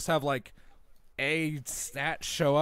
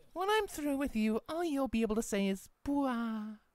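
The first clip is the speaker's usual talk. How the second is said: sultry, come-hither, seductive voice, pitched up; 9 semitones higher, 4 dB quieter than usual. Speaker improvises a line for a date-night scenario, in a seductive voice. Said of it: "blah in a seductive voice".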